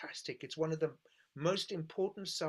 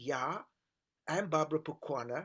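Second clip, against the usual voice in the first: put-on Swiss German accent. Retelling a phone call to Dudu's number; imitating Barbara Pukwana's Swiss German accent. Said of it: "this Swiss German voice said".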